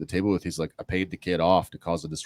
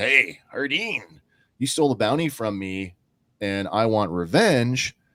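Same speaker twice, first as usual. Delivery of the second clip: rough, gravelly, youthful rasping edge; 3 semitones higher than usual. Describing a prison mess hall scene where a voice confronts Hardin; gravelly younger Boba Fett voice. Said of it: "this gravelly younger voice like".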